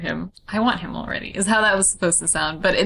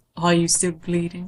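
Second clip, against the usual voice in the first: put-on British accent. Wondering whether a phrase is british, speaker tries it in a british accent. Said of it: "I wonder if it's like British".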